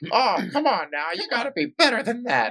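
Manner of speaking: very high-pitched, squeaky voice. Remembering a coach everyone used to imitate, doing his voice in a high pitch. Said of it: "it'd be this high pitch".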